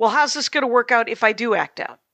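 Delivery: ordinary delivery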